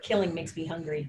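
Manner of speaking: half-whispered aside over the shoulder. Speaking in character over the shoulder after the party asks for food: half-whispering over the shoulder. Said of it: "I'm gonna whisper over my shoulder".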